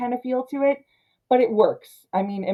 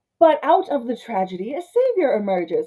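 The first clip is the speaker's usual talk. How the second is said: extra dramatic, swooping comic-book style narrator voice; 3 semitones higher than usual. Reading a comic book opening aloud line for line, in a dramatic reading voice. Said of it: "I'm reading line for line".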